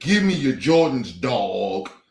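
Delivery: low put-on slang, drawn-out "dog". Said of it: "You sound like a bozo".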